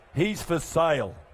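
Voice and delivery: slow, low, deliberate, announcer-like delivery.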